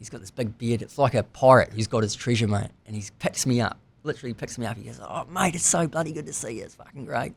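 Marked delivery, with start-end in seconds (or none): 5.0-7.3 put-on genuine hearty Australian accent, pitched up. Retelling the friend lifting him up: Mark Clore's real Australian accent. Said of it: "real Australian".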